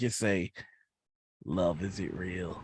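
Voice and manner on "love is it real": enigmatic, cryptic, with unsettling certainty. Looking someone straight in the eye and asking, cryptic, uncomfortably certain. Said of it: "almost in a cryptic voice, ... cryptic with a certainty that is very uncomfortable".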